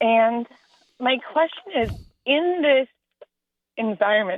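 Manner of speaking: halting, choked-up voice, catching and breaking. Describing her racist neighborhood before asking her question, emotional. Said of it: "sorry, I'm emotional".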